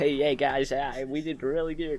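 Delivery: slow, bad American accent.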